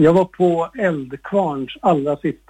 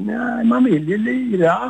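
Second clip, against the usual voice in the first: put-on thick, broad Småland accent, slow and high; 7 semitones higher than usual. Retell the drummer's answer about his band quitting, in Werner's broad Småland accent. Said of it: "på sin bredaste småländska".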